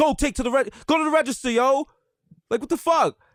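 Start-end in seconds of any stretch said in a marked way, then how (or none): 0.0-1.9 put-on yelling, much higher. Retelling a chaotic line, the speaker recalls yelling at the couple ahead: retelling a yell. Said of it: "I had to yell at the couple".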